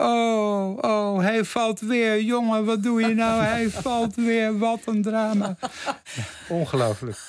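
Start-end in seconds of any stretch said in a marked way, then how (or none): 0.0-5.6 mock very high exasperated cry, long drawn-out "oh". Speaker recounts what another person called out, retelling someone calling out. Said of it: "Theo riep".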